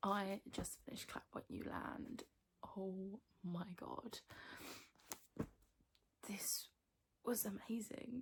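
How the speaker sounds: speaking tearfully while crying. Updating after just finishing a book, crying while talking. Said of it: "as you can see, I'm crying".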